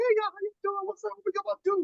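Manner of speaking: very high, casual voice. Acting out chatting with friends before another man walks in: voice all the way up. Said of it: "my voice is all the way up".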